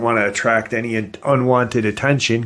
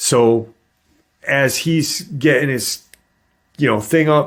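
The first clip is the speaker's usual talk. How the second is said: normal talking voice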